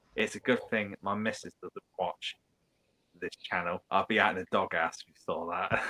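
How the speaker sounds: normal talking voice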